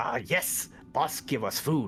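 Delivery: kobold monster creature talk. Voicing a kobold answering another player's question, kobold voice. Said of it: "your kobold voice".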